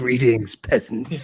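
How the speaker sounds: put-on arrogant, haughty, lordly, self-important tone. Greeting the chat as peasants after being told he's getting cocky: mock arrogant. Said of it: "I'm getting too cocky".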